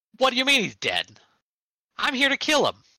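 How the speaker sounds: very high, shrill, animated top-of-the-lungs scream. A narrator voices Roy arguing with a group, Roy yelling animatedly. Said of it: "yelling at them like".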